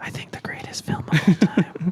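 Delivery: playful, arty, breathy up-close whisper. Joking with the other hosts about a film director's podcast, in a mock whisper. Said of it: "It would just be us whispering".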